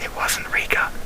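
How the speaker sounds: soft, whispered aside.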